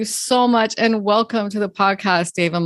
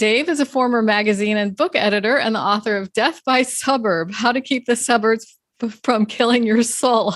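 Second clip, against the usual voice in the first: words broken up by laughing throughout. Host introducing a guest on the show: laughing while talking. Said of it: "I'm laughing".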